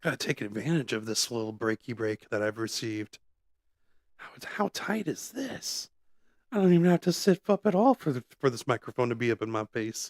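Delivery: whispered, close-up talk, hushed throughout. Speaking into a close microphone during a commercial break: whispering. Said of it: "I'm gonna whisper this uh".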